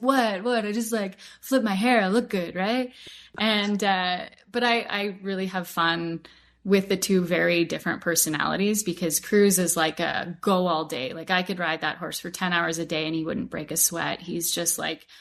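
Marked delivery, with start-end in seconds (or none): 0.0-2.9 airheaded, empty-headed surfer dude voice. Voicing a handsome, strutting horse replying to its rider: surfer dude voice. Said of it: "I kinda call him the surfer dude".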